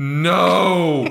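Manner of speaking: very high, loud, anguished shout.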